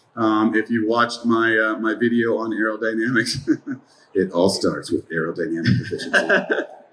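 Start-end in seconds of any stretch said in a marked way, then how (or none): 4.2-6.7 low, sultry put-on sexy voice. Explaining aerodynamics in a video, putting on a sexy voice. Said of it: "I tried to put on my sexy voice".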